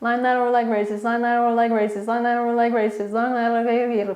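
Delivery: rapid tongue-twister repetition, rattled off until garbled.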